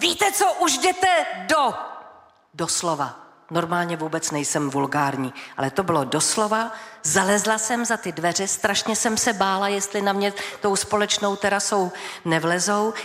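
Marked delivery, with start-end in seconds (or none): 0.0-1.7 put-on furious roaring yell, pitched very high. A woman recounts shouting at people keeping her awake at five, retelling a roar. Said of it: "zařvala".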